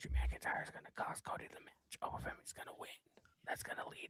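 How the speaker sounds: hushed voice. Giving match predictions to the others: whispering. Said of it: "Why are you whispering?".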